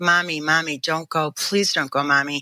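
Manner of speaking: put-on acted, frightened, pleading child voice. Retelling begging her mother not to leave when she was little, retelling a frightened plea. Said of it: "I had a horrifying feeling".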